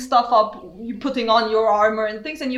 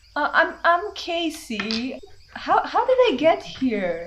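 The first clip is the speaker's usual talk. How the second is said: very soft female voice, much higher; 4 semitones higher than usual. Voicing a being in a ring that speaks to the wearer, very soft female voice. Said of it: "very soft female voice speaking to you".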